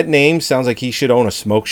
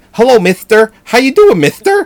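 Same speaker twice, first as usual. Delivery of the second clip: put-on very high, lisping, gap-toothed little-girl voice; 10 semitones higher, 5 dB louder than usual. Imitating how the dubbed little girl sounds, gap-toothed little girl voice. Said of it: "that's how she sounds she's missing like 17 teeth".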